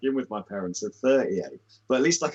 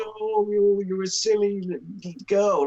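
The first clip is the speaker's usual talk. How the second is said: higher-pitched mock baby talk; 8 semitones higher than usual. Mocking how he talks to his dogs on the calls: imitating Lorne's baby talk. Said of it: "on the calls when he's like".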